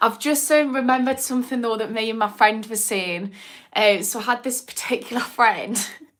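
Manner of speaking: words coming out through laughter. Telling the group about a memory with a friend: laughing while talking. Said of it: "Sorry, I'm laughing".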